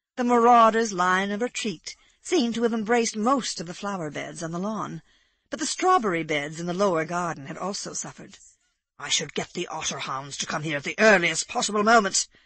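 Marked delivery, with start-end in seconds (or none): 9.0-12.3 fierce, savage tone. Egbert, after marauders wrecked the garden beds, speaks savagely. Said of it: "said Egbert savagely".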